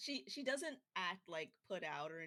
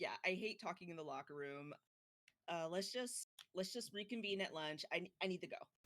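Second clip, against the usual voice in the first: ordinary talk, nothing marked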